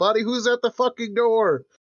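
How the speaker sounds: shouting, pitched very high. Playing a character who yells down to Buddy about the door: yelling down to someone. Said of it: "I'll yell down".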